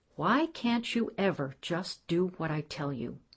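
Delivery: ordinary delivery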